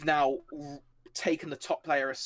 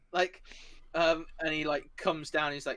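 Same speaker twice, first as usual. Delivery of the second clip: ordinary talk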